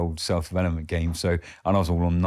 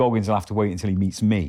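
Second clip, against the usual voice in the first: normal talking voice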